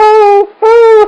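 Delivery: mock squeaky-voiced holler. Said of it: "I had a squeaky voice".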